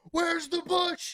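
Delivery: acted very high, loud, top-of-lungs scream. Telling of chasing a bear, speaker re-enacts what he screamed: retelling a top-of-lungs scream. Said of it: "I'm screaming at the top of my lungs".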